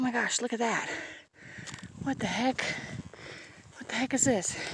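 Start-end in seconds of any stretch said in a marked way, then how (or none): 2.0-4.6 winded, very soft, panting, between breaths. Walking uphill in the heat and spotting something odd, out of breath. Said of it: "Sorry, I'm breathing so hard".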